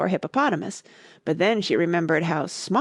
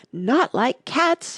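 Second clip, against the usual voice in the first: shrill, passionate, high-pitched crying out; 6 semitones higher than usual. Reading the story aloud, the Mouse cries out to Alice, shrill and passionate. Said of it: "cried the Mouse in a shrill, passionate voice".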